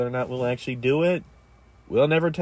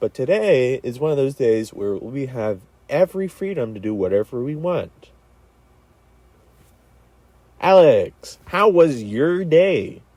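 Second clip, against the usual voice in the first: put-on loud radio announcer voice; 5 dB louder than usual. Host opening the show and asking alex about the day, radio announcer voice. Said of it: "I just wanted to do a radio voice for the beginning".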